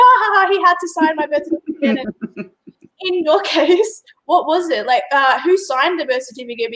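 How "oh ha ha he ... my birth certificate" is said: play-acted, amused laugh, pitched up. Retelling a woman's reaction to her own story, imitating her amused laugh. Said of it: "hilarious irony".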